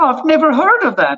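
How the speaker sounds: put-on speech with an Israeli accent. Retelling what a woman said while cooking on the boat: Israeli accent. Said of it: "my Israeli accent's really perfect".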